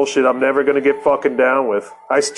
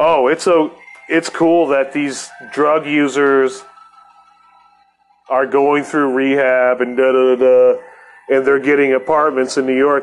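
normal talking voice

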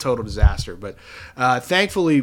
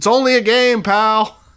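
loud, drawn-out, high hollered yell; 9 semitones higher, 8 dB louder than usual. Retelling how a guy yelled out across the press box, retelling a yell. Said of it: "some guy yelled out across the press box".

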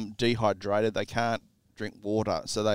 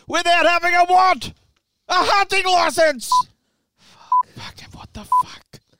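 shrill, booming, very high, loud swooping screaming; 9 dB louder than usual. Podcast host reacting on air, screaming. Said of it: "So much easier to hear you when you're not screaming".

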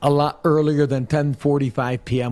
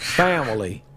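drawled out in a fake Southern accent; 2 semitones lower, 3 dB quieter than usual. Mocking a coach's new accent: Brian Kelly fake Southern accent. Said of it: "south of the Mason-Dixie line accent".

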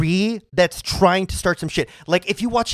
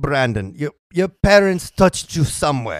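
put-on bad German accent; 5 semitones lower than usual. Retelling what someone said to Brandon about his parents, bad German accent. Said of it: "That's my German accent".

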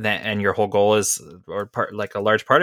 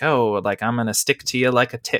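put-on cutesy tone; 2 semitones higher than usual. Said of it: "weird cutesy little thing".

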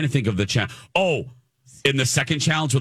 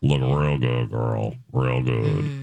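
unsettling creepy tone, dropped far down, slow; 12 semitones lower than usual. Joking about a cake that looked good, in a put-on creepy voice. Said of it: "That's a creepy voice".

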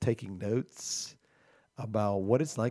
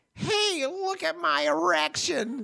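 very high, very slow, creaky, silly, ridiculous drawl; 4 dB louder than usual. Quoting a brother who was proud of himself: imitating Rick's ridiculous voice. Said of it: "Oh, that's him".

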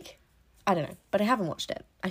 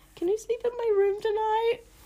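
put-on very high, pleading, scared little kid voice. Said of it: "turn to my mum and be like".

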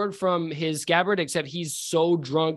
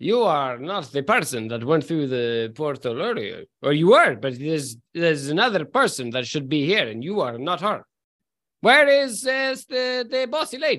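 staggering, unsteady character voice; 2 semitones lower, 3 dB louder than usual. Voicing a character staggering up from the bar: Rainier Neverember voice. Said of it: "and he says".

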